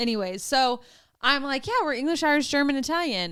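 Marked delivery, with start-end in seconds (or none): 1.7-3.3 puffed-up, proud, bragging tone, pitched up. Retelling telling a parent about family heritage: imitating own proud boast. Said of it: "and so proud".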